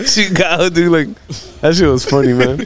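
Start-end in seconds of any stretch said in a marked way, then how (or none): none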